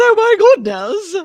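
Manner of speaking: mock pearl-clutching scandalized gasp, put-on transatlantic accent. Imitating him in a transatlantic accent, mock pearl-clutching gasp. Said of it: "Clutching his pearls".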